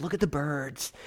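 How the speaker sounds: hushed, barely-above-a-whisper hippie voice. Recalling how he first imagined Jesus sounding in this passage, hippie Jesus voice. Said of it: "he's got like this hippie sort of voice".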